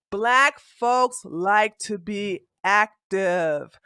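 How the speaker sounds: slow deliberate pace. Making a point in a heated argument, speaking slowly. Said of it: "let me speak it slow".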